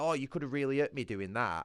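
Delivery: high-pitched, reproachful scolding voice. Retelling how the worker who wheeled the chair complained: imitating a worker scolding. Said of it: "she gave me a load of shit saying".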